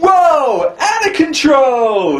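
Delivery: very high, slow, drawn-out nineties California dude voice. Imitating the film's bad guy lines: imitating a nineties California dude. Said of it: "totally California nineteen nineties".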